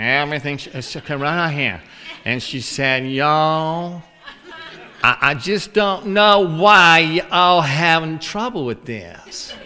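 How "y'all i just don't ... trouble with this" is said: imitated nasal woman's voice, slower. Retelling what a lady from Nashville said, in a nasal voice. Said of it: "it was just all nasal".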